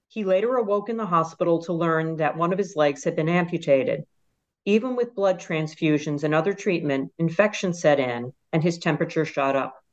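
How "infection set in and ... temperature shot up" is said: normal talking voice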